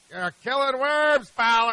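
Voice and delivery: loud, high-pitched yelling. Retelling a scene from The Natural, manager at his pitcher; retelling Wilford Brimley's yell. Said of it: "he's yelling at his pitcher".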